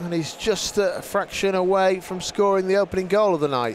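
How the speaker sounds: usual speaking voice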